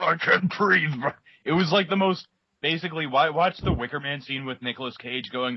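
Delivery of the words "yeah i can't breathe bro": pained, hurt wrestler scream, breaking off mid-word. Retelling a wrestling match moment: imitating Hulk Hogan screaming. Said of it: "Hogan starts screaming".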